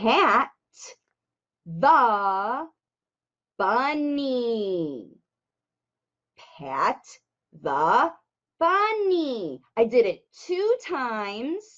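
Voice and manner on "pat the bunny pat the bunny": slow, careful, halting reading with a pause mid-phrase. Showing listeners how to read a book for language facilitation: read slowly with a pause. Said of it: "I said it slowly".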